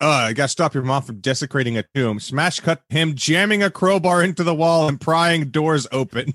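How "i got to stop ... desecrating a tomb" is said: mock sarcastic delivery. Describing a scene from a show they love, retelling a sarcastic line. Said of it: "he very sarcastically like".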